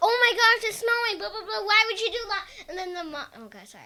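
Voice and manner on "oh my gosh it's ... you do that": really loud, high freak-out. Retelling how the dad starts to freak out: imitating a loud freak-out. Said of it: "sorry, I just got really loud".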